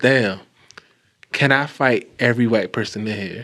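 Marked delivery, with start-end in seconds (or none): none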